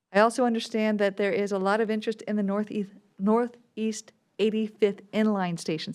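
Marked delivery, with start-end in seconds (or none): 3.1-5.9 slow, deliberate, each word carefully laid out. A speaker giving a public update on regional projects, said slowly. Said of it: "I had to say that slowly".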